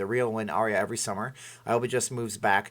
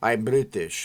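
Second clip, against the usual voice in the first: fake Russian-sounding accent. Quoting a guy they know who tries a British accent: Russian-sounding accent. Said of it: "Every single thing he does sounds like a Russian".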